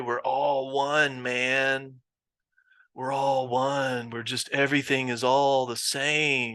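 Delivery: slow drawling hipster voice, lingering on "same". Discussing Qigong with a group, mimicking hipsters in a mock hipster voice. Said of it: "That's my hipster voice".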